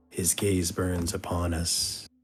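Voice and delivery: ghostly, eerie, hushed half-whisper. A game master describes half-whispers heard from a glowing orb, half-whispering voice from an orb. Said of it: "whispers like".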